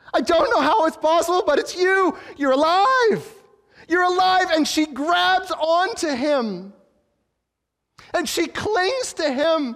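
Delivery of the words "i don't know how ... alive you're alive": put-on woman crying out, higher and louder. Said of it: "cries out in Aramaic".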